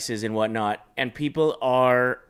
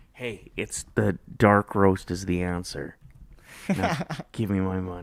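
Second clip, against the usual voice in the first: stage whisper with voice; 4 semitones lower than usual. Acting out charging fans for a coffee-cup game answer: acting out a half-whisper. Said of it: "Just whisper".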